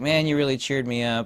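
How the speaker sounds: plain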